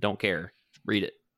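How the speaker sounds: ordinary talk, nothing marked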